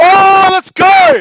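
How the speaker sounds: screaming at full volume, very high-pitched. Watching a game together and reacting to a play, yelling. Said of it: "Sorry for the yelling".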